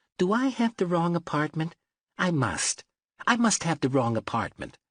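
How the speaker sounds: tiny, high little voice. A narrator voices a man at Parker's door, in a tiny high voice. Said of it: "he said in a tiny high voice".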